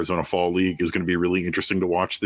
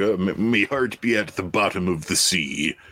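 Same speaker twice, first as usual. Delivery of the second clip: put-on pirate voice. Quoting the pirate from the Lego movie, Metalbeard pirate voice. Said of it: "The pirate from the Lego movie".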